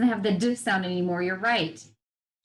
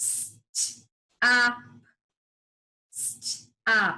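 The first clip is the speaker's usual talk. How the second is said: mechanical, segmented robotic voice. Showing a learner how to say the word, in a robot voice. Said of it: "Say it like a robot".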